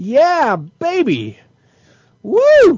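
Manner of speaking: very high, very loud swooping whoop. Celebrating a correct guess after hearing it was right: loud cheering. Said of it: "Sorry, that was loud".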